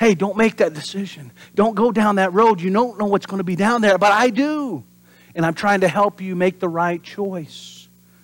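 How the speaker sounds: still small voice, urging. Preaching about hearing God's warning, voicing God: God's still small voice. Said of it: "He uses the still small voice".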